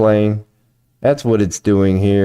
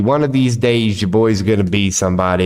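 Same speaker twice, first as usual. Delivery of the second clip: ordinary talk, nothing marked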